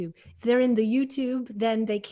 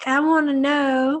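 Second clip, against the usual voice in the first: loud, high put-on Southern accent. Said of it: "read the questions in the best accent".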